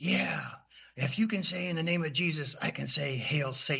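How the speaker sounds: rough, rasping voice. Retelling what a man at the council meeting answered him, in a really raspy voice. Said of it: "he just got this really raspy voice".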